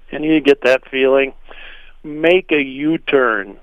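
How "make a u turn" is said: firm, stern navigation voice. Telling listeners about a GPS, imitating its stern female voice. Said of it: "the female voice said sternly".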